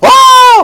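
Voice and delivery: very high, loud, excited hollering. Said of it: "She was so excited, going".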